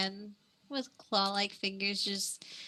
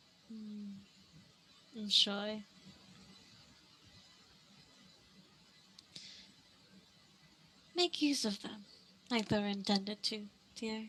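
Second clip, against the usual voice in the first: soft half-whisper right at the ear; 6 dB quieter than usual. A game master voicing a voice that half-whispers in a player's ear, half-whispering voice. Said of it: "You hear the voice whisper in your ear".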